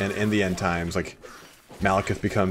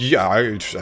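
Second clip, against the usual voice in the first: put-on stutter, higher and louder; 3 semitones higher, 7 dB louder than usual. Retelling own answer to being asked about handling Nightmare: imitating own stammering. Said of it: "stuttering and stammering".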